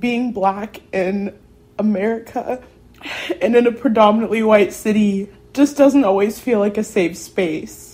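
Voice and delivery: emotional. Speaker who says talking about this makes them emotional, speaking emotionally. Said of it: "I get emotional talking about it".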